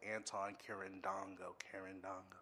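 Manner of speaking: name said with English accent. Showing how they say their own name: english accent. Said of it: "When I say it with the English accent".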